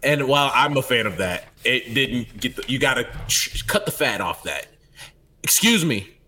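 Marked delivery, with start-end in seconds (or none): 5.4-6.0 stern, firm voice. Showing how to complain at a counter: stern voice. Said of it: "they hear the sternness in your voice".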